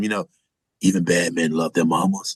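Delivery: put-on whisper. Describing a movie scene, quoting what a character whispers to a deputy: retelling a whisper. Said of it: "he whispers to him".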